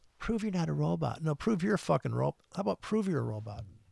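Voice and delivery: annoyed, angry, worked-up ranting tone. Complaining about a password login that sends a code, getting angry. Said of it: "I'm getting all angry now".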